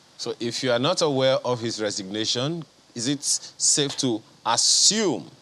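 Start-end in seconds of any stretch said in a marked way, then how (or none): 3.0-5.2 assume stressed hard, slow and drawn out. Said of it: "underline the word assume".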